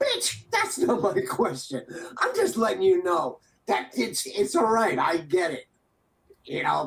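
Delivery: mock fed-up, irritated, swooping, pissed-off tone. Retelling an argument, speaker quotes their own reply to her, retelling a pissed-off retort. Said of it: "being like all pissed off".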